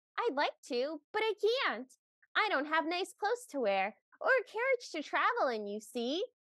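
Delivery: doll-like cartoon voice with swooping pitch. Recounting a performance, the speaker voices Cinderella in a Barbie-meets-Dora voice. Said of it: "a very Barbie meets Dora the Explorer voice".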